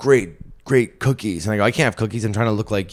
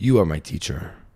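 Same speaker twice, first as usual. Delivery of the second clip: imitated Eastern European accent; 3 semitones lower than usual. Retelling a man's reply after his English was praised: Eastern European accent. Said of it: "like an Eastern European accent".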